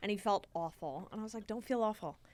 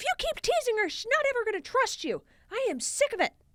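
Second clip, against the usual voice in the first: put-on angry snapping voice, higher and louder; 14 semitones higher, 6 dB louder than usual. Retelling how the dad snapped at Ted for teasing: imitating dad snapping angrily. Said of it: "You didn't intimidate me with that impression".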